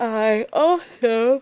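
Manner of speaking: slow, loud yawn in the middle of speaking. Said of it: "forgive me for all the yawning".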